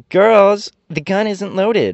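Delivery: very high, drawn-out cheerful call. A rebel leader turns to her army of girls, crying out. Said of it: "she turned to the army and cried".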